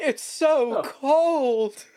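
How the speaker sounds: very high-pitched yelling in a character voice. Voicing a revived party member in a game: yelling in character. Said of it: "Edward yells".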